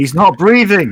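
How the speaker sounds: urgent, alarmed shout, high and loud. Giving a fallen man mouth-to-mouth, yelling at people: yelling in character. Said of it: "so I'm just gonna yell at people".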